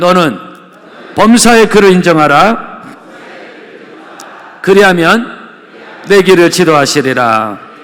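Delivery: loud, high, fervent proclaiming.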